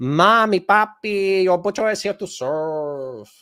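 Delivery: put-on Mexican accent, slow, "serve" drawn out. Repeating a line on a whim, Mexican accent. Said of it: "I said that with a Mexican accent".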